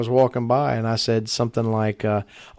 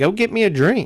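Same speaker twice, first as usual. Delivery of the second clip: bossy, demanding, pitched up, full of attitude; 8 semitones higher than usual. Retelling a girl's demand for a drink, imitating someone saying it with attitude. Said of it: "she said it kinda with an attitude".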